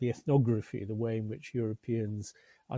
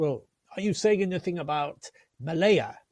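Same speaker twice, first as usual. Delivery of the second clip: put-on fast, raised voice in strong Russian accent; 6 semitones higher, 5 dB louder than usual. Retelling what the volume's editor, a famous economic historian, once asked, in Munir Postan's strong Russian accent. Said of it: "pronounced in his strong Russian accent".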